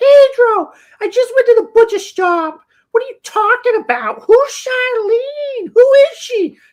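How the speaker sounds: shrill, very high, loud, exploding outburst. Retelling a breakfast fight, quoting mom: imitating mom exploding in anger. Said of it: "she absolutely detonates".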